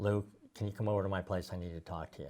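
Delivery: mock solemn, very serious, grave, weighty tone. Quoting the director's phone call to them, imitating a very serious voice. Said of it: "in a very serious voice".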